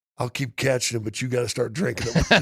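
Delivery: confiding, voiced stage whisper. Retelling what someone said after slamming a shot: imitating a whisper. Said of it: "and he's got a whisper".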